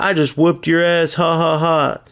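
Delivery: mock smug gloating with jeering taunting ha-ha-ha laugh. The speaker imagines laughing at someone who asks him about playing a game: mock gloating laugh. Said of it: "And I'm laughing like".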